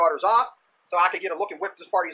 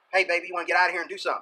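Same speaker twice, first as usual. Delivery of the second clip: put-on whispering voice. Retelling how a guy at a party talked in a girl's ear: imitating a guy whispering. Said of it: "this guy starts whispering stuff into her ear".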